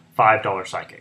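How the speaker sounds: plain reading voice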